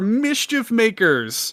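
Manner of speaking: mild, high, slow, drawn-out mock yell. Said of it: "I'm screaming in my car".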